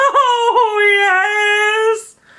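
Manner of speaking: very high-pitched, drawn-out wailing voice. Introducing a video, the speaker breaks into the Paul Bearer voice. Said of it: "how much I love my Paul Bearer voice".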